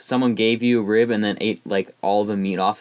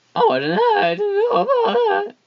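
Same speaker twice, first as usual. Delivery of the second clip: voice cracks way up to very high pitch; 4 dB louder than usual. On a family show, a host reacts to news of a movie release, voice cracking. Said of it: "Sorry, voice crack".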